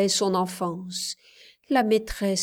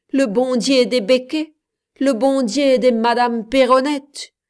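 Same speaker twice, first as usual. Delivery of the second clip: raised, scornful, snickering, mocking sneer; 4 semitones higher, 6 dB louder than usual. A man answers a woman who spoke of God, sneering.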